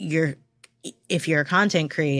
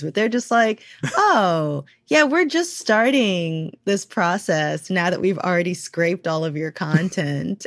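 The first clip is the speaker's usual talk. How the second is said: sarcasm in every word, mocking tone; 3 semitones higher than usual. Describing what AI companies say, quoting them with mocking sarcasm. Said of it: "I'm trying to keep the sarcasm out of my voice".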